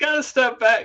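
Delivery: shrill scream, pitched very high. Retelling trying to move a crowd back at a relay exchange: retelling own screaming. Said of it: "screaming, like".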